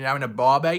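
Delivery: loud put-on Australian accent. Calling out to Graham, stuck in Australia: put-on Australian accent. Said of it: "As you can tell, I've not done my Australian accent for a long time".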